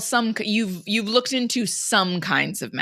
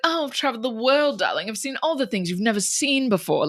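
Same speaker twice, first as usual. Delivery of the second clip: thick, laid-on put-on mid-Atlantic accent. Retelling a scene, the speaker voices a character pitching himself to another character: mid-Atlantic accent. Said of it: "mid-Atlantic accent".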